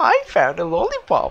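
very high-pitched cartoon character voice. Trying out cartoon voices despite a raspy voice, the speaker attempts the Pops voice. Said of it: "I can somewhat reach the Pops voice".

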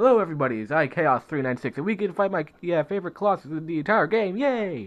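high, upbeat, enthusiastic presenter-style voice. Opening a video about fighting a favorite Colossus: talking very quickly. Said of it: "maybe I should stop talking this quickly".

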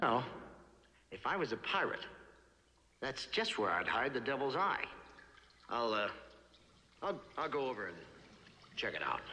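drawn out with a slight stumble. Speaking as a character in a scene, talking very slowly. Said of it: "He talks so slow".

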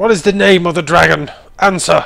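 booming, very loud put-on shout. Demanding the dragon's name from a captured enemy: shouting in character. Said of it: "shouts out".

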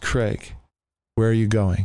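normal talking voice

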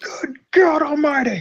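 put-on very high-pitched old man's exclaiming. Describing a sound heard during play, JR impression exclaiming. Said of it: "The voice of JR just says".

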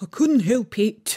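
grudging, sulky, sullen, put-out tone. Answering another painter who complains about splashed paint, sulky tone. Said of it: "said Five in a sulky tone".

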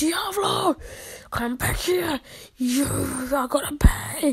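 play-acted furious, angry voice. Retelling what he shouted at Diablo while playing, imitating his angry voice. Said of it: "In his angry voice when he was playing".

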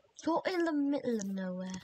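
quick, put-on British accent. Chatting with someone who asks why you don't sleep: British accent. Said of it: "Why did I do a British accent?".

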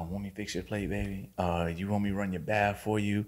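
mock, doting, sweet-talking, lovingly fussing tone. Retelling how the mother spoke to her new partner: imitating doting mother. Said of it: "she'd be rubbing his shoulder and she'd be like".

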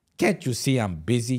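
put-on slow, arrogant, dismissive tone. Retelling a busy player's reply to an autograph request: imitating an arrogant reply. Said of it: "real arrogant".

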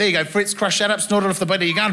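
plain

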